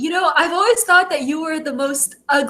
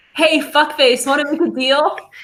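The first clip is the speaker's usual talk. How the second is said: ordinary delivery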